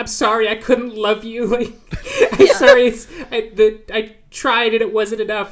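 high-pitched, tearful, blubbering sobbing. Retelling a wife who bursts into tears with her husband: imitating someone sobbing. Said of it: "she just bursts into tears and starts sobbing".

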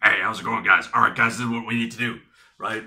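loud, barking drill-sergeant voice. Describing a big man with no indoor voice, speaker imitates his barking man's voice. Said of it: "He had like a barking man's voice".

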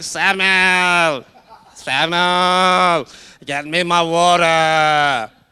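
put-on loud old man's call, "water" drawn out. Retelling how Eli would call out to Samuel, Eli's old man voice. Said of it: "If he was calling you".

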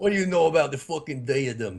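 bad put-on New York accent, Australian-tinged. Trying to pick up a new york accent, in a bad fake new york accent. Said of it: "Australian who immigrated to New York".

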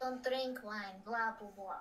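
dismissive cartoon villain accent. Retelling a mother's words to the others: Gru-like voice. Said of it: "Why did you just sound like Gru?".

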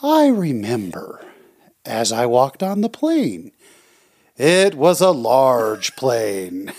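bad, slow, sing-song storyteller voice. Show your listener the way he would tell a story, as a bad impression of his storytelling. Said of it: "that was the worst impression".

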